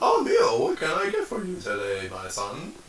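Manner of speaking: high, swooping robot-oven voice. Playing a robot oven greeting Neil at breakfast: voicing a robot oven. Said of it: "it comes up to you".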